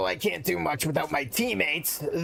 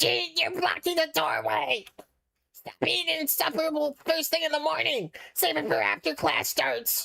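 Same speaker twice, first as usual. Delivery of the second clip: very high, raspy put-on voice; 12 semitones higher than usual. Asked to do the Denny voice again, raspy Denny voice. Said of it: "Do the Denny voice. ... raspy, and ra- I think I nailed it".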